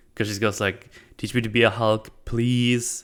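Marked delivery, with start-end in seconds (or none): 1.2-3.0 mock, very sarcastic voice, sarcasm laid on thick. Retelling how a character asks to be trained: imitating someone very sarcastic. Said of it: "very, very sarcastic".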